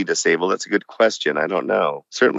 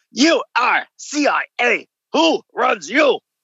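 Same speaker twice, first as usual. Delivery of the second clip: mock shrill, high-pitched harsh yell. A former prisoner imitates his interrogator, imitating the interrogator's yell. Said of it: "let me see if I can imitate my interrogator".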